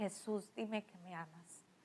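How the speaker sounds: very soft, quiet, desperate pleading tone.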